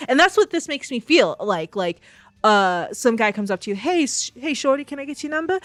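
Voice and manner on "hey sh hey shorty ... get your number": high-pitched, put-on accent. Imitating a guy who asks for your number: put-on accent imitating a guy. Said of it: "I'm so sorry about that accent".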